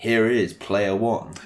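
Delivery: slow, drawn-out arena ring announcer call. Describing a wrestling game's ring announcer, imitating a ring announcer. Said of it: "the ring announcer sort of saying".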